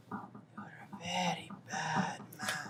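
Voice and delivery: very quiet, hushed, barely audible whisper. Whispering to him while another asks what is being whispered, whispering. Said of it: "what are you whispering to him?".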